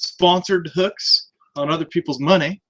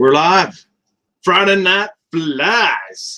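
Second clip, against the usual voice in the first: very slow on-air broadcast announcer voice; 3 dB louder than usual. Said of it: "announcer's voice right there".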